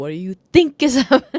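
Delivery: full-volume, very loud, high-pitched yell. Complaining about the dm, speaker acts out yelling at her: retelling a yell. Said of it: "I'm sitting here yelling at her like".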